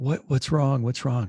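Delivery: mimicked whispering. Retelling leaning over to a friend during mass: imitating a whisper. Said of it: "And I lean over and whisper to him".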